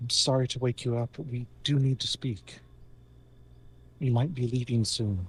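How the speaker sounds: whispering. Speaking through a familiar to wake her brother: whisper. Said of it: "using her voice in a whisper".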